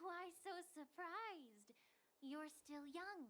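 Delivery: slow, thick, dripping mocking sarcasm. Answering a surprised merchant about a long wait: dripping with sarcasm. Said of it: "Your words are dripping with sarcasm".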